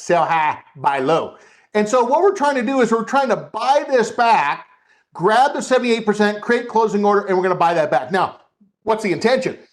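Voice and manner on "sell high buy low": put-on Southern US accent, lower and slower. Teaching listeners to practice a trading phrase, in a southern accent. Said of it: "in a southern accent to say sell high".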